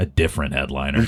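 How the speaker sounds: put-on whisper. Retelling what a comic whispered in the ear before going on: imitating Gabe whispering. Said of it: "he whispers in my ear".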